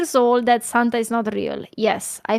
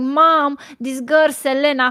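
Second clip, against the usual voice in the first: put-on tearful, crying voice; 3 semitones higher than usual. Retelling coming home from school and telling mom: imitating own past crying. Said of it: "And I was crying, man. I was crying".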